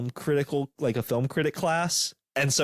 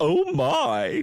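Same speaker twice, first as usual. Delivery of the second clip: put-on, drawn-out exclamation, higher pitch; 11 semitones higher, 3 dB louder than usual. Teasing another speaker that they sounded like George Takei: George Takei voice. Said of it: "you sounded like at any moment you're just gonna go".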